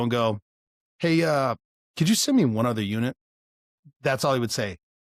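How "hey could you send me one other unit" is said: super calm, totally unfazed voice. Retelling a SWAT guy on the radio in a crisis, imitating a super calm voice. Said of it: "but super calm on the radio".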